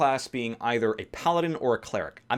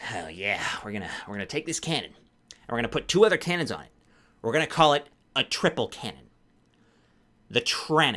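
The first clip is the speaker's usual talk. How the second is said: tiny, small gnome-like character voice. Talking about gnomes, the speaker does his small gnome voice. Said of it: "I pride myself on having a good small, small race voice".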